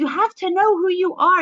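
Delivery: put-on Southern accent, very high-pitched voice. Quoting Ruth Krieger, whose book inspires the listeners, in Ruth Krieger's southern accent. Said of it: "in her southern accent".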